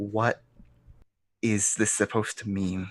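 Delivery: quick, soft, hushed aside whisper. Character leans over to a companion, hand to mouth: whispering. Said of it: "and kind of whispers".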